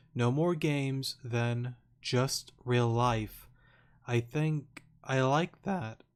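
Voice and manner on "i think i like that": voice cracks, slower. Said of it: "Voice crack there".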